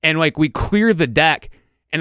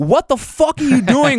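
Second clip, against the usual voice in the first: scream, much higher, slower; 7 semitones higher than usual. Telling how they yelled at a friend chasing it into the woods: retelling a scream. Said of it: "I'm screaming, like".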